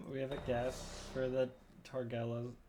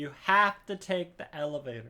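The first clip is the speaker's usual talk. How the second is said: slow, stretched, put-on yelling game character voice; 2 semitones higher than usual. Retelling what the loud game character said: imitating a yelling game character. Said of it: "She's just like".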